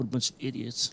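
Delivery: put-on quiet mutter. Retelling what a stranger at the grocery store kept saying: imitating muttering under breath. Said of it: "talking under his breath".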